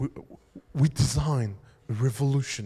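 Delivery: low, put-on English accent, laid on thick. Acting out the British designer coming on with his accent, do Jony Ive's English accent. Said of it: "avec son accent anglais, très important l'accent anglais".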